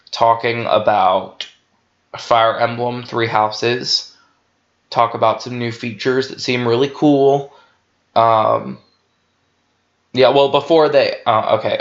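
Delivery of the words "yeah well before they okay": stammering, stumbling over words, slower. Giving predictions about an upcoming Nintendo presentation, stammering. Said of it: "I'm stammering".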